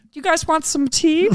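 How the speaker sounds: put-on speaking in a British accent. Acting out a character offering tea to hunters: british accent. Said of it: "He's got a British accent for some reason".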